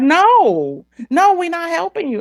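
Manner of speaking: very high, swooping sing-song yell, "no" drawn out. Retelling listening to callers and answering them at the phone: retelling own yelling. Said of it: "I'm yelling at my phone".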